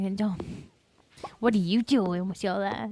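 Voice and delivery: imitated, mock-sassy tone. Retelling what a hypocrite said, in a mock-sassy tone. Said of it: "In a sa- in a sassy tone".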